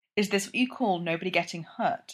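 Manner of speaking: plain reading voice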